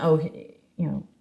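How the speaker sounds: rattled off fast and low, guilty and dismissive.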